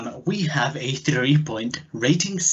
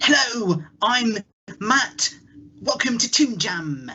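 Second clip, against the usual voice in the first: put-on toy voice, much higher; 9 semitones higher than usual. Voicing a toy version of himself opening a podcast, toy version of himself. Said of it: "toys versions of yourselves".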